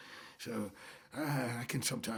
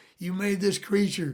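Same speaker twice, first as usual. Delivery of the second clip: high, loud scream from the gut. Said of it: "the gut, just screaming".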